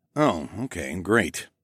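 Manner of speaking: muttered, mumbled words. Reading a first-person story, answering a hissed warning, muttered. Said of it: "I muttered".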